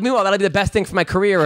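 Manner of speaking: plain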